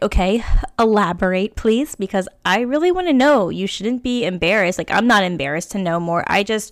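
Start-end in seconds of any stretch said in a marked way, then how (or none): none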